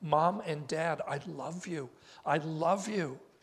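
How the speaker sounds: put-on tearful voice, close to tears, almost frantic. Telling of a daughter phoning her parents from college, acting out tearful, frantic voice. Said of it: "In a tearful, almost frantic voice".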